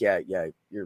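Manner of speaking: soft, hushed, subdued and backed-down voice. Retelling a coworker's apology after being told off: imitating someone going quiet. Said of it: "he got really quiet".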